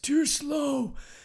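put-on high, raspy old-man voice.

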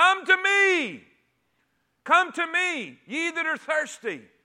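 loud full-throated cry. Speaker acting out a man standing and crying out to the thirsty, retelling a loud cry. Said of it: "with a loud voice at the top of his lungs".

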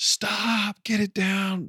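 stretched, alarmed yell, very high and very slow. Retelling yelling at a guy lifting a load with a fork, retelling a yell. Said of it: "and I'm yelling".

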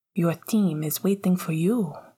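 soft voice, said softly. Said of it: "much more softly to Sirius".

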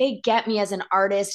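ordinary delivery

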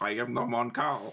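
put-on alien accent. Answering a request to speak in a Mon Cal accent: Mon Cal accent. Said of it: "but in a Mon Cal accent".

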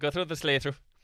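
put-on Irish accent, high. Voicing a character guiding the group to a drive-through: Irish accent.

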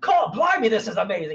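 high-pitched, cheesy fifties-style scientist character voice. Quoting a comic character's typical line: Doctor Nemesis voice. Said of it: "nineteen fifties scientist guy".

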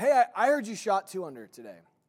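yelling very loudly. Retelling how a friend called out across the course: imitating a friend yelling. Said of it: "he yells out to me".

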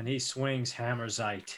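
plain

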